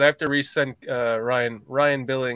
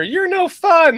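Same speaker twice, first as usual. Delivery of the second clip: high, slow, mocking whine. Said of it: "I hear".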